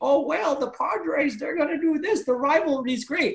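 put-on high old-lady granny voice. Imitating what people say that the speaker hates hearing, in an old granny voice. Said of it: "that accent was like a straight granny".

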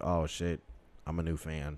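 ordinary delivery

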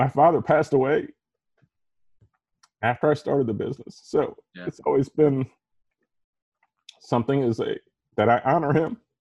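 near tears. Talking about a late father during a podcast, tearful. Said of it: "I'm not expecting to cry during a podcast".

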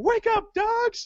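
excited high-pitched yell.

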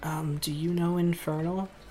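hushed, barely-there, very quiet soft voice. Voicing a character who switches language mid-conversation: speaking very quietly. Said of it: "very quietly".

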